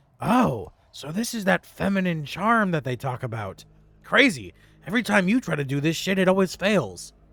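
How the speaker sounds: whispered line. Leaning back in character and speaking to another character: whispering in character. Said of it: "I lean back and I whisper to Damiana".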